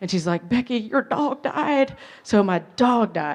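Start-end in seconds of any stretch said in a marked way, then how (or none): 0.5-2.0 put-on tearful weeping, high crying voice. Retelling a phone call with bad news: imitating Jane crying. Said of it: "She's crying".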